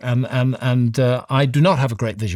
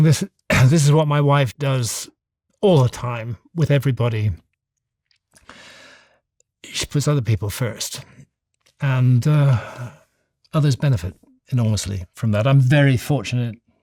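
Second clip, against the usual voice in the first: tearful voice, on the verge of crying. A speaker who just apologised for getting emotional, close to crying. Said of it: "I'm going to end up crying".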